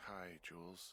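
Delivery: sleepy, worn-out, weary voice. Greeting someone who just called them a big dumb idiot: tired. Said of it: "you sound tired".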